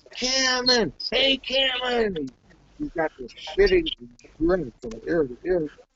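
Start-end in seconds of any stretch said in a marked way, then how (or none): 0.2-2.2 put-on, very high, carrying hollering yell. Retelling how a man called across a chow line: imitating someone yelling. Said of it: "he's yelling in front of you".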